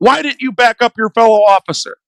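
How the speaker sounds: ordinary talk, nothing marked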